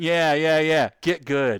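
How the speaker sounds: put-on smug voice. Retelling a video of a painter who brushes freehand: imitating a smug man. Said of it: "he was smug".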